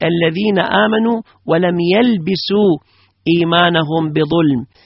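plain

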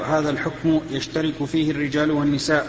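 usual speaking voice

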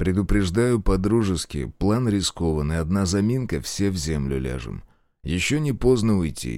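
ordinary delivery, nothing marked

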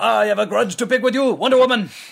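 loud, high-pitched put-on Japanese accent. Describing a man who grew up to wield a katana, voicing him in a put-on japanese accent. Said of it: "And he picked up the accent".

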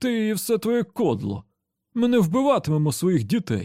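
contemptuous, disdainful, scornful snort, nearly laughing. Narrator reads a character rejecting another speaker's proposal, contemptuous, almost laughing. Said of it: "зневажливо пирхнув Беніто Кеш".

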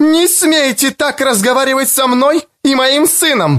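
shrill, very high, loud shouting. A mother shouts at another girl's mother, who just came out of the house. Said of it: "Мать закричала и на нее".

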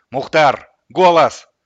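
loud full-volume calling. Without turning around, a man in the cab addresses the dog, speaking loudly. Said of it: "громко произнес".

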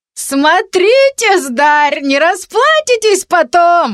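words squeezed out through laughter, very high, slow. A woman, after laughing till tears, answers a bold boy, speaking through laughter. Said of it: "сквозь смех сказала она".

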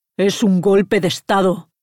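annoyed, impatient, irritated tone. Answering another man's confused question: irritated. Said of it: "contestó Mijail irritado".

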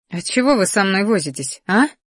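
ordinary delivery

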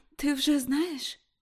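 quivering, unsteady, trembling high-pitched voice. A daughter, back home and in bed, answers her mother in a trembling voice. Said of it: "мовила Рут тремтячим голосом".

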